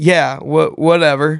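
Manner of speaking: feigned, nonchalant, indifferent tone. Asked if ready to watch the World Cup final, answering nonchalantly. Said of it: "we were trying to act nonchalant".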